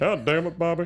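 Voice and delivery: put-on cartoon dad voice. Chatting about a show, one friend answers with a Hank Hill impression.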